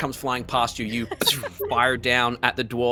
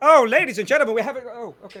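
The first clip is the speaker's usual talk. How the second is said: booming, high-pitched announcer voice; 11 semitones higher, 7 dB louder than usual. Voicing an announcer who starts to call the winners: announcer voice. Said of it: "So the announcer goes".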